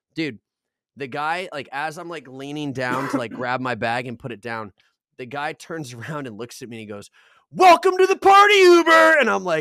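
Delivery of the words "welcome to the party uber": piercing, shrill, very high, full-blast scream. Speaker retells a passenger turning around to greet him as uber, imitating someone screaming. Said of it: "screamed that in my face".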